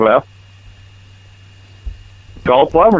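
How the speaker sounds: curt, snippy, exasperated, irritated snap. Answering a caller about a clogged drain, yelling. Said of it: "are you yelling at me".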